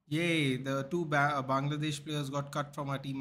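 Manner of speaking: normal talking voice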